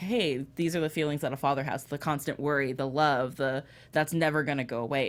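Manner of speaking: usual speaking voice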